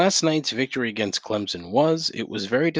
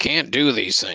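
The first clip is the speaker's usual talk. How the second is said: disappointed, let-down fatherly voice. Wagging a finger at people breaking the rules: mock disappointed father scolding. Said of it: "wagging my fucking finger like a disappointed father".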